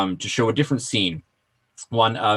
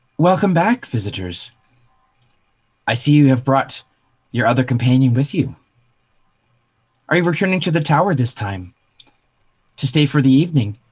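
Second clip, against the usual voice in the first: somewhat rigid, stiff, raised feminine voice; 5 semitones higher, 5 dB louder than usual. Game master voicing a voice that speaks out as the party approaches a door, stiff feminine voice. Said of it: "a somewhat stiff feminine voice that speaks out".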